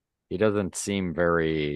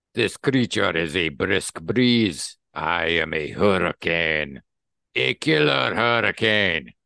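put-on louder, sizzling villain voice with a Russian accent. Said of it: "His voice is like sizzling oil".

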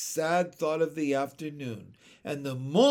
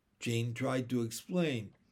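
plain

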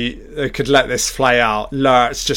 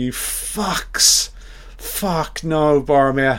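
mock screaming, much slower; 3 semitones higher, 4 dB quieter than usual. Recalling watching this scene in the cinema, retelling screaming in the cinema. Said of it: "So screaming".

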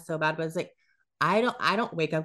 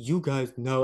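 mock serious tone, lower pitch; 4 semitones lower than usual. Mocking how she talks in her videos: imitating a serious voice. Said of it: "when she does that serious".

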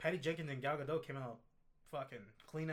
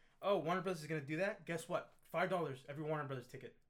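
plain

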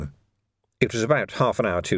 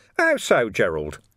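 ordinary delivery, nothing marked

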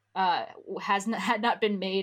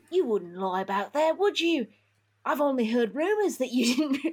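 put-on slipping into a higher-pitched Australian accent; 5 semitones higher than usual. Reading aloud an old man's words to Harry Potter, drifting into an Australian accent. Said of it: "I'm getting into Australian".

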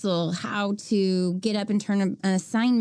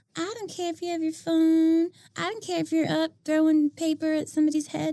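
meek, timid teacher voice, pitched up; 9 semitones higher than usual. Asked about it afterward, a speaker lapses into a put-on timid teacher voice. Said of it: "that was my like timid teacher voice that wants to be liked".

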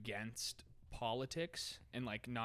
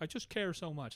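high, weepy put-on crying voice, sobbing; 6 semitones higher than usual. Imitating a man who was crying on television: mock crying. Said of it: "crying on C N B C".

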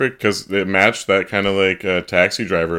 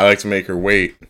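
normal talking voice

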